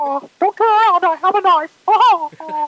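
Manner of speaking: very high pitch, slow pace. Joking as Mickey Mouse behind someone in the kitchen: Mickey Mouse voice. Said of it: "hearing Mickey Mouse right behind you".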